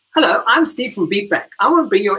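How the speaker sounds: high, happy, helpful call-centre voice. The speaker recalls reading lines as a cheerful call-center character; imitating Steve's happy voice. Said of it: "I can sound like a happy guy".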